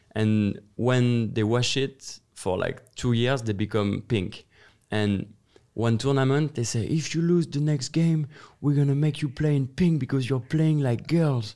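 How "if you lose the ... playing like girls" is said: put-on coach voice, screaming and bawling. Retelling what the coach said at a tournament: imitating a screaming coach. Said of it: "he's screaming at us".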